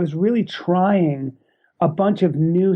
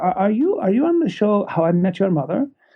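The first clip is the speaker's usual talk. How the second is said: put-on thick, heavy Indian English accent. Retelling what a woman from Mumbai said on a plane, in a heavy Indian accent. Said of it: "she had a heavy uh, Indian accent".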